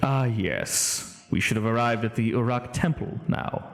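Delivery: smiling voice with an audible grin. Voicing Karth as he pops out of a scroll: speaking with a smile. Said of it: "you can hear the smile in his voice".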